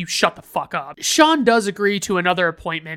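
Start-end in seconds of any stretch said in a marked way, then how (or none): none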